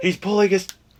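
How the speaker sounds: high, loud mock distress cry.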